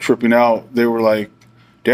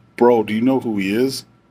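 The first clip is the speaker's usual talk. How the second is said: hushed, very quiet voice under the breath. Retelling what an officer asked them, in a very quiet voice. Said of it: "he says in a very quiet voice".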